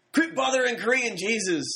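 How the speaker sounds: yelling, pitched way up. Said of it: "[name] yells, like".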